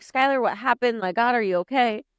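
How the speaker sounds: put-on panicked, frantic, freaked-out worried-mother voice. Retelling a phone call where mom answers: imitating a mom freaking out. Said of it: "she's freaking out".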